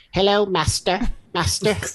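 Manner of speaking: high, tiny robot dog voice. Describing a robot dog helper from a TV series, in a little robot dog voice. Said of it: "he has this little voice".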